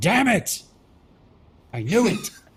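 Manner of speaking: high-pitched yelling. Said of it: "just verbally yells".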